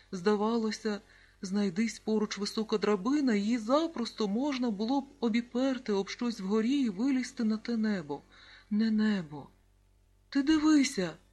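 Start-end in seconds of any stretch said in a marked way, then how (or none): 10.3-11.1 abrupt, sudden, loud exclamation. Reading a story aloud, voice Serhiyko's sudden cry: sudden exclamation. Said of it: "вигукнув раптом Сергійко".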